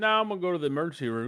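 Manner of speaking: breezy, cavalier offhand tone. Retelling telling a roommate about going to the emergency room: retelling own cavalier reply. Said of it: "real cavalier".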